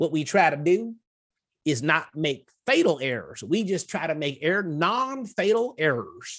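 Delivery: put-on Tennessee accent, drawled slowly. Quoting a radio figure's saying about mistakes: Dave Ramsey Tennessee drawl. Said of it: "Tennessee drawl".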